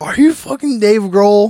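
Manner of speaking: mock drunken slurring. Retelling a coworker's exchange with another man, imitating Brian's drunk slurring. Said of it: "my coworker Brian was like slurring".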